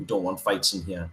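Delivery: dry, expressionless, low, flat deadpan. Retelling how a waiter answered one of the lads' order: imitating a deadpan waiter. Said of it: "The guy was just deadpan".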